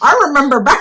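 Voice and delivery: put-on old wise duck voice.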